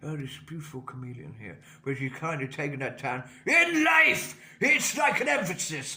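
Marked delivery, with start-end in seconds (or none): 0.0-1.6 very soft, quick, murmured narrator voice. Answering the request to do one, a David Attenborough impression. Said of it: "Do a David Attenborough".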